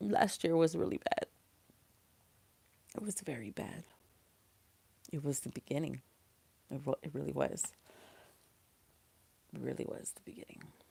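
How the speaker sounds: very soft, quiet, holding back tears. The speaker compares this year to a bad last year, holding back tears. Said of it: "I'm trying not to cry so hard".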